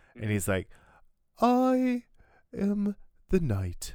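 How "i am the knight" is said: very slow, drawn-out cartoon bear voice swooping up and down. Describing how someone voices other characters in another voice, Winnie the Pooh voice. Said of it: "in, like, Winnie the Pooh's voice".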